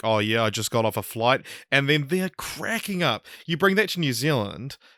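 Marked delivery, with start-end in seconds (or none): 0.0-1.5 put-on deadpan voice. Imitating Julian answering an interviewer: deadpan Julian impression. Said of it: "that kind of deadpan".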